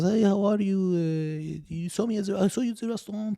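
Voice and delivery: put-on soft, high French accent. Retelling running into a man at the gym, quoting him imitating a French accent. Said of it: "he has a French accent".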